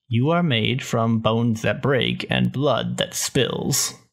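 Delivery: slow, snarky, drawn-out delivery. Quoting a dialogue option answering grunts: deadpan snarky Sith Warrior voice. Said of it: "dialogue options you can respond with".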